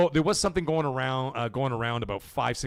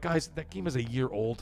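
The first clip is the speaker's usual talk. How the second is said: ordinary delivery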